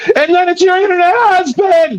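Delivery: very high, squeaky, woman-like voice. Retelling what another debater said, imitating a high-pitched voice. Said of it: "did you hear the high pitch of his voice when he goes".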